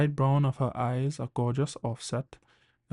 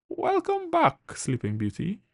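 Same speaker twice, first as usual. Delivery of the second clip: bright, cheery, very high sing-song voice; 13 semitones higher than usual. Narrator reading a nurse greeting a patient who just woke up, cheery. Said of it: "came a cheery voice".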